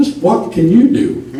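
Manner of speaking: snide, dismissive, snarky tone. Retelling a british commander questioning a small young recruit; mock-snarky voice. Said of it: "In a snarky voice".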